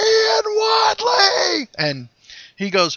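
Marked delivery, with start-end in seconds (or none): 0.0-1.7 mock, very high, stretched-out scream. Recalling spotting a man down a long hallway, retelling a scream. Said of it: "I cut my mouth and screamed".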